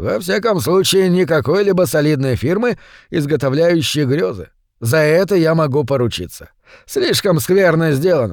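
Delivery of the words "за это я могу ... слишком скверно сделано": ordinary delivery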